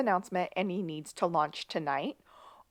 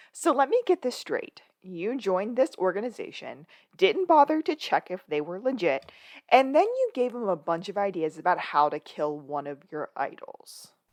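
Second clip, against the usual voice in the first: put-on very smug, self-satisfied, needling delivery. Retelling what a detective said to the others: imitating a smug tone. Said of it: "very, very smugly goes".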